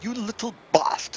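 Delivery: very high-pitched, fake English accent. A player repeats his line, attempting an english accent. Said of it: "I wish I could speak with that English accent".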